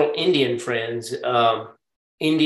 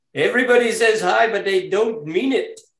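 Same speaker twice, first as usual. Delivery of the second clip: put-on Indian English accent, pitched a bit higher; 8 semitones higher than usual. Quoting what a man said about greetings, in an imitated Indian accent. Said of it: "and I hate to do it in the Indian accent, but I almost have to".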